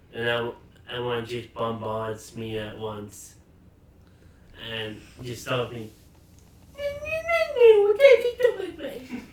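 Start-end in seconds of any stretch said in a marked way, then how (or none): 6.8-9.3 funny, very high, loud, put-on squealing voice. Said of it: "can you say it in a normal voice?".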